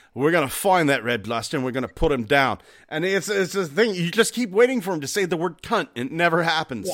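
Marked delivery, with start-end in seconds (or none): 0.2-2.6 gruff put-on British accent. Retelling an animated film's lines: Billy Butcher voice. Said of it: "using the Billy Butcher voice".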